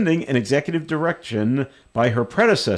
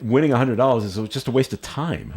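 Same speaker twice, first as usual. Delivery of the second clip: ordinary delivery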